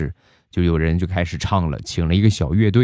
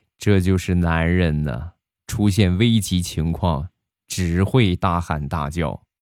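usual speaking voice

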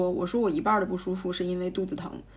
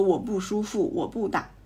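plain

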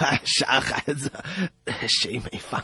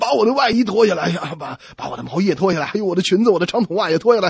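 shrill, very loud shouting; 5 semitones higher, 9 dB louder than usual. Telling a joke, acting out a wife yelling at her husband: retelling a shout. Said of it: "就冲着丈夫大喊".

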